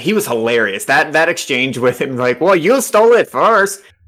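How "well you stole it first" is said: poor, pitched-up attempt at a Midwestern accent. Quoting a hilarious character's line from an exchange, attempting a Midwestern accent. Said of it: "I can't do that accent".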